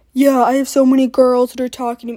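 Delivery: loud, ribbing, teasing voice. Mocking a fourteen-year-old brother coming home from school: mocking imitation of younger brother. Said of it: "let's see if I can mock him".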